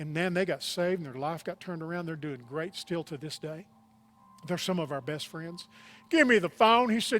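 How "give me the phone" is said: put-on very loud, booming Texas accent, pitched up. Retelling what a man said on the phone, in a Texas voice. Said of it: "He had this real Texas voice".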